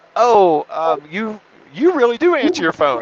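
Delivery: high, halting stammer. Retelling a late-night phone call with a realtor: imitating someone stammering. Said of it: "she's stammering".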